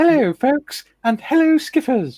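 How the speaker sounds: put-on very high, shrill, very loud Geordie accent. Reading a viewer's chat greeting aloud: imitating Tiff's female Geordie accent. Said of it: "I can't do a female Geordie accent".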